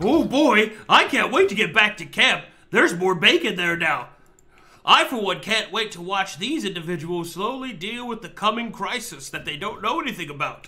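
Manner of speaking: loud talking-dog character voice. Voicing a dog eager to get back to camp: voicing a talking dog. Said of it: "this dog will say".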